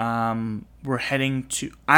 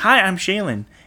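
high-pitched yell, right out loud; 8 semitones higher, 6 dB louder than usual. Retelling how they first met, when she called out: imitating Shaylin yelling. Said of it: "she yells".

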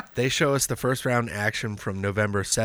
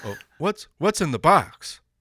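deadpan put-on commentator voice; 7 semitones higher, 5 dB louder than usual. Imagining Larry Zbyszko in the movie Seven, the speaker does him emotionless. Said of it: "He's like".

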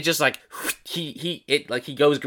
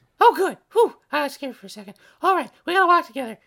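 very high, put-on small creature voice; 13 semitones higher, 4 dB louder than usual. Asked whether they can still be best friends, the homunculus answers: homunculus creature voice. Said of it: "That voice is fun".

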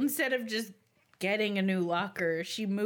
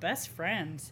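put-on flat, expressionless deadpan delivery; 3 semitones lower, 4 dB quieter than usual. Retelling answering your longtime best friend, a put-on deadpan reply. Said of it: "I look at her deadpan and go".

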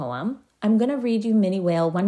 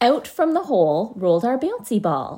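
plain

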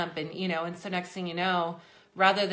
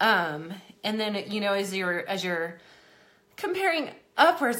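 breathless, winded, out-of-breath talking; 2 semitones higher, 4 dB louder than usual. A pregnant speaker talking to viewers, apologizing for being out of breath. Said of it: "Sorry, I am out of breath".

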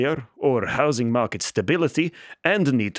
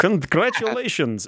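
put-on Russian accent, pitched up; 7 semitones higher than usual. Reading an open email on the desktop aloud: russian accent. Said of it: "weirdly in English with a Russian accent".

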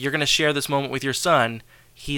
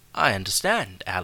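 bad put-on teacher voice slipping into British accent; 5 semitones lower, 4 dB quieter than usual. Retelling a scene where a character refuses to change a grade: bad Mister Feeney impression. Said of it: "that was a bad Feeney".

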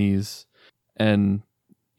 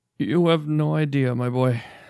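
distressed and upset, sobs held back, pitched up; 5 semitones higher than usual. Voicing a father answering his son, who asks what is wrong: upset. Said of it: "You seem upset about something".

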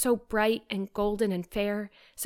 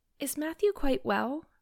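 faltering, uncertain, hesitant, higher-pitched; 6 semitones higher than usual. At breakfast, after he has gone out, she asks if he is well, hesitating. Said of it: "she said hesitatingly".

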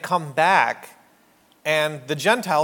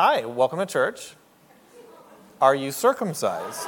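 sing-song church usher voice; 2 semitones lower than usual. Acting out a church usher greeting someone at the door: acting as a church usher. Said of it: "imagine that we had the ushers at the church".

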